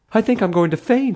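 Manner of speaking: very high-pitched gasping. The mother, after the fake arm appears among the fins, says this gasping. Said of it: "the mother gasped".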